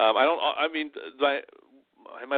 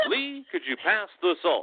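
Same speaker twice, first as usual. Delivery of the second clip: TV evening-news anchorman voice; 4 semitones higher than usual. Imitating how their father talked even at dinner, in a tv anchorman voice. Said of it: "He talked like this all the time".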